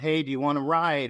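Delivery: ordinary delivery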